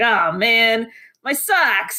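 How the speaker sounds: put-on slow, irked old man voice. Retelling what a man said on waking up, in a bothered old man voice. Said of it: "in such a like just kind of a little bit bothered old man voice".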